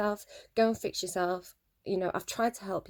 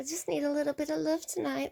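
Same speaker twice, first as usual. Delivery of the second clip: put-on little girly voice, higher; 7 semitones higher than usual. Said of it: "She puts on a little girly voice".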